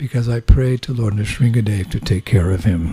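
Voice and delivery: put-on murmur under breath. Retelling a quiet reply to devotees: imitating speaking softly under breath. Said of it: "under his breath, very softly".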